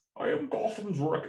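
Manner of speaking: very high-pitched put-on voice. Doing a voice after being asked by the other speaker: Bane voice. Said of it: "can you do the voice?".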